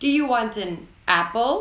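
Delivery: pitch goes up on apple. Explaining the upwards tone used in questions: rising tone on apple. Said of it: "the sentence ends with a word that is said in an upwards tone".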